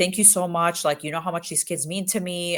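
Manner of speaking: ordinary talk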